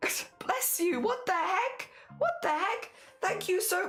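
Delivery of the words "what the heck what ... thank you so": emotional cracking voice, higher pitched. Thanking a viewer for gifting subscriptions, voice cracking with emotion. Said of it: "my voice can't take emotion right now".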